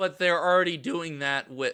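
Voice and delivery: cracking, breaking voice. Speaker arguing passionately, voice cracking mid-sentence. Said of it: "my voice cracked".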